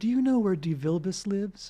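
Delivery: put-on sweet tone, mock-sweet. Retelling what strangers from a car asked them, imitating a sweet voice. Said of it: "they look at me sweetly, and they say".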